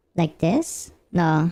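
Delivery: squeaky, very high helium voice. Trying again to sound like a girl, in a helium-like voice. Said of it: "I just sound like someone who who took too much helium".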